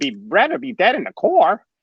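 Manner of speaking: bad, very high sing-song voice, swooping slowly. Quoting a toy figure's line in a bad Jar Jar impression. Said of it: "It's my bad Jar Jar impression".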